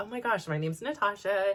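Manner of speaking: put-on California Valley girl way of talking. Retelling telling guys her name back then, in Valley girl speech. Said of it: "of course, I was, like, a Valley girl".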